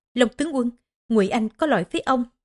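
ordinary delivery

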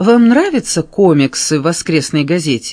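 ordinary delivery

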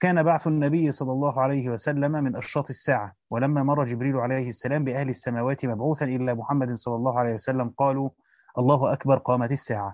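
usual speaking voice

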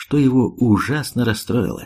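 ordinary delivery

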